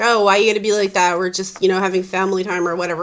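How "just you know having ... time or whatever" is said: ordinary talk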